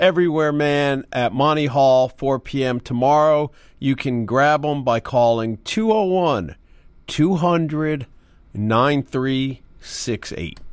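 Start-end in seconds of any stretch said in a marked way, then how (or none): 3.8-10.6 much slower and lower delivery. Host giving away tickets, repeating the phone number, saying the number slower. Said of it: "say the number slower this time".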